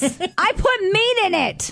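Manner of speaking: high, very slow, stretched-out voice. Joking about Big Bang Theory, doing a Mrs. Wolowitz voice. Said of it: "I didn't even know I could do that voice".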